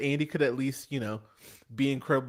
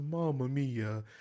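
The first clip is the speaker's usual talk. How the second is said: put-on flat, toneless, lifeless monotone; 5 dB quieter than usual. Imitating an actor's flat line delivery: imitating a flat "Mamma mia". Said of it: "He says it just like that".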